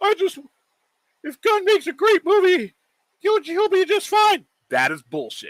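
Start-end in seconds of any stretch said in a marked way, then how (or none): 0.0-4.4 high, squeaky, very dumb-sounding mocking voice. Mocking what people say about a great movie: mocking dumb voice. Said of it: "I try to do it in the dumbest voice I can find".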